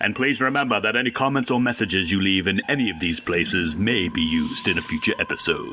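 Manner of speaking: put-on low, deep, just-woke-up morning voice. Reading out a reminder about listener comments: deep morning voice. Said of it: "It's this deep morning voice".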